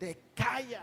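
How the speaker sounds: mock demon crying out, high, held in. Retelling how a demon shouted at a preacher: imitating a demon shouting. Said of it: "el demonio se volvió a gritar".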